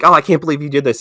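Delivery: put-on yelling. Retelling a movie scene where two characters argue: imitating someone yelling. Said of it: "they're both just yelling at each other".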